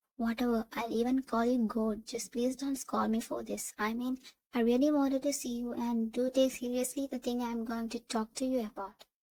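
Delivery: ordinary delivery, nothing marked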